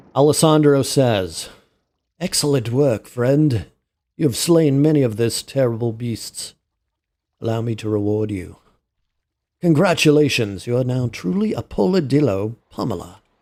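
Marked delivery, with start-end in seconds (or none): 2.1-13.1 put-on British English character voice. Voicing a game character's dialogue, as Alessandro in a British accent. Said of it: "I don't know why I gave them British accents".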